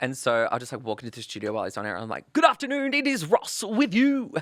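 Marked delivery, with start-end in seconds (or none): 2.3-4.3 very high, loud radio announcer voice. Walking into the studio while the announcer is on air, the speaker starts imitating Ross on air. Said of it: "I would always imitate him".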